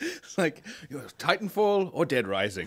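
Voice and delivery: talking through laughter, high and animated. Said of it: "Why are you laughing".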